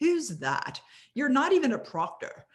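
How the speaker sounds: high, rough, clumsy, bad British accent. Speaker retells a woman questioning the speaker on stage: bad British accent impression. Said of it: "she was saying it just like this".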